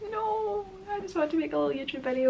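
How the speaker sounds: indignant, high-pitched, rushed delivery.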